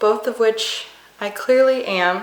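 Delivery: ordinary talk, nothing marked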